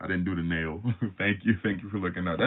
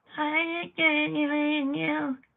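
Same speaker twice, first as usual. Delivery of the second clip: very high-pitched, sneering, derisive put-on voice. Speaker recalls someone he asked for id, imitating how this fool talked. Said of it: "this fool was talking like this".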